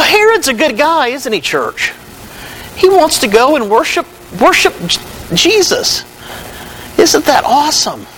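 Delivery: sarcasm laid on thick. Speaking to the church about King Herod's words, with heavy sarcasm. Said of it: "I say that with a heavy dose of sarcasm".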